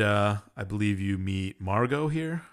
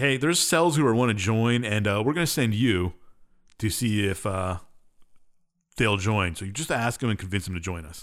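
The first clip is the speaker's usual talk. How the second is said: ordinary talk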